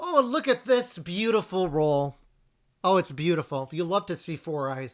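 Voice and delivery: sarcastic, fake gushing enthusiasm. Reacting to an opponent's dice roll during a board game: sarcastic. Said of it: "Of course, it's all sarcasm".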